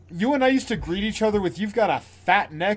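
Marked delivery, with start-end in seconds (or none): none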